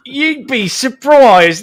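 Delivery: poor put-on British accent. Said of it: "with a bad British accent".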